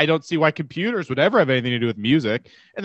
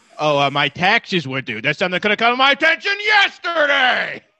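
playful put-on voice, high and swooping all over; 6 semitones higher than usual.

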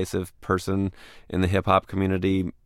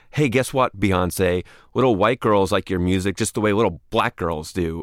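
ordinary delivery

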